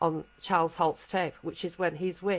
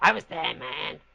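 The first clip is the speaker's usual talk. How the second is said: put-on Brooklyn accent. Retelling how a man barged into a conference uninvited, in a Brooklyn accent. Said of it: "he puts on this Brooklyn accent".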